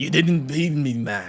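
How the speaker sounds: failed, bad attempt at a Scottish accent. Guessing what someone would say, the speaker tries a bad Scottish accent. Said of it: "I can't do a Scottish accent".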